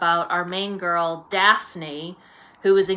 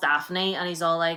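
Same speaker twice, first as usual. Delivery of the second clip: ordinary talk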